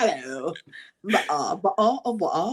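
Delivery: very slow put-on British accent. Mimicking how Americans think British people talk: stereotypical British accent. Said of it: "That's how we think every British person is like".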